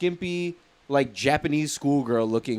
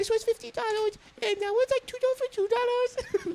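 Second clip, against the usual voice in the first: very high, pushy salesgirl patter voice; 5 dB quieter than usual. Retelling how a girl selling shirts talked: imitating a girl's selling voice. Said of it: "Let me tell you how she sounded".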